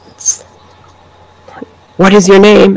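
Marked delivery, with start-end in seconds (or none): 2.0-2.8 put-on child's whisper, higher pitch. Retelling a voice heard on a film's recording, imitating a child's whisper. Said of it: "It's just like a child's whisper".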